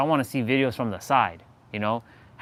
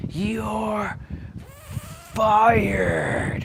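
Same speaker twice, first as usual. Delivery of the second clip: fired stretched long with a swooping pitch; 9 semitones higher than usual. Joking about firing everyone at Google, Vince McMahon impression. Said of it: "I'll be like Vince McMahon".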